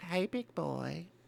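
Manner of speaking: very quiet, hushed, creaky, flirty woman's voice. Narrating a scene play-by-play for listeners, in a mock-flirty woman's voice. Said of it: "The the woman flirts with Harry".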